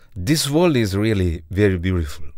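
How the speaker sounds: ordinary delivery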